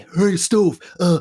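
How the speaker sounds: very high, loud put-on voice.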